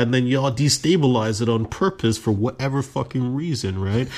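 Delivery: ordinary delivery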